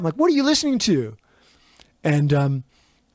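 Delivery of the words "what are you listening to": high-pitched yelling. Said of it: "we yell over to the car".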